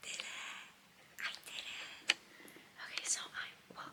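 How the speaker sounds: very quiet, breathy whisper, barely audible. Speaking at half past two while the family sleeps, whispering. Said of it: "I'm whispering. Because my family's asleep".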